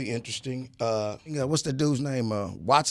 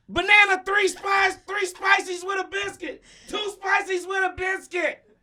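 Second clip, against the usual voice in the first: put-on voice lacking bass, much higher and louder; 4 dB louder than usual. Insist to a doubting co-speaker that he really talks like that, imitating a voice lacking bass. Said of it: "Have you listened to him?".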